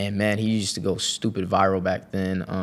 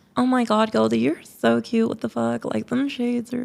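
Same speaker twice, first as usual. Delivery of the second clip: put-on very high creaky girl voice. Speaker shows a girl character he came up with, Candace girl voice. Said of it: "basically it's a girl voice".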